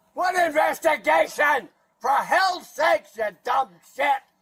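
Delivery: very loud hollering, shouted outburst. A detained woman confronts the officer investigating her, yelling. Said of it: "If you stop yelling".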